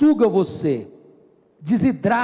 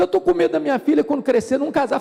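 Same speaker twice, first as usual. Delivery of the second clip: high, tearful voice, crying through sobs; 5 semitones higher than usual. Retelling a woman's words in the pastoral office: imitating a crying woman. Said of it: "chorando, chorando, chorando".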